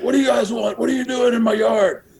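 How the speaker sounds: loud, very high shrieking yell. Retelling a man answering the door to a crowded yard: imitating someone screaming. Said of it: "and he scre-, he's like".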